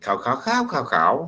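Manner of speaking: cow said through five contrasting Thai tones. Teaching listeners the five tones of Thai, demonstrating each tone. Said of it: "there are five tones".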